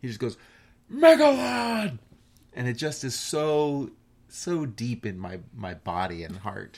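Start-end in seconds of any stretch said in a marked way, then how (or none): 0.9-2.0 very high, very loud, impassioned, passionate shout. Recalling a line where a character shouts a name, imitating a passionate shout. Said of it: "he just shouts Megalon's name in such a way".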